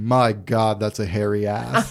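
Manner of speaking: distinct deep voice, unhurried and slow-drawn. Telling a story about a laughing crowd, imitating Matt's deep voice. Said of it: "Matt's distinct deep voice being like".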